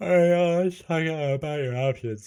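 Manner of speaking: talking through a yawn. Voicing a lawyer character talking about options, yawning while talking. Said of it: "he says, yawning".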